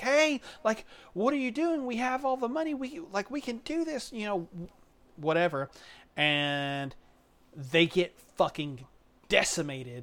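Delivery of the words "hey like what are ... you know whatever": very high-pitched, desperate screaming. Retelling a film scene as police pull people into the chamber: imitating screaming clones. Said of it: "they're like screaming like".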